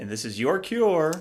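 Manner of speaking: broadcast-style radio announcer delivery. Co-host finishing the show's opening intro, radio announcer voice. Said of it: "I really like to go into my radio announcer voice there".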